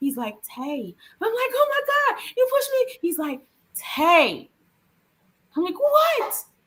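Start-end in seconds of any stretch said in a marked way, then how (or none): 1.2-3.0 acted, shrill, very high tearful crying yell. Retelling a moment of disbelief, reacting to someone who pushed you, imitating a tearful yell. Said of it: "I'm crying and I'm yelling at him".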